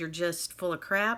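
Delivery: plain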